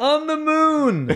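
high, slow, laughing shouted call.

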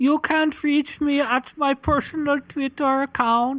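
put-on Swedish accent. Asked by a host where people can reach them, answering in a Swedish accent. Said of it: "Is that a Swedish accent?".

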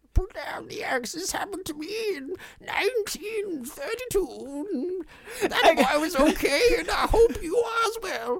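put-on very high-pitched, loud elderly woman's voice. Acting out a character's lines from the end of the story, old lady voice. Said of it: "she's like an old lady's voice by the end".

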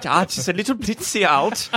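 German-sounding English speaker. Joking about wartime British understatement: Englishman with German accent. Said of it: "Why did the Englishman sound very German?".

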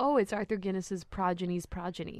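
ordinary talk

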